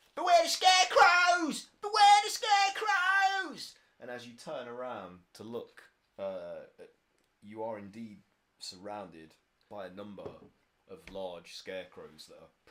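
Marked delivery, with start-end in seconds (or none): 0.2-3.8 shrill, very loud, high scream. Voicing an unseen voice in a rye field: screaming a warning. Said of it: "scream at you".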